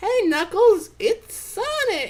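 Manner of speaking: very high-pitched, annoying voice. Asked what kind of voice Tails does, answering in a Tails voice. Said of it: "It's exactly the voice".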